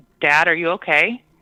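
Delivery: ordinary talk, nothing marked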